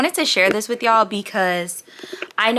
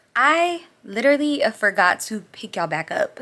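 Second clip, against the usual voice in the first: ordinary delivery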